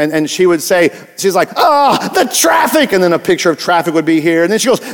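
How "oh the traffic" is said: frazzled, high, stressed-out voice at wit's end. Describing an old Calgon soap commercial: imitating stressed Calgon commercial lady. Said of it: "She was so stressed".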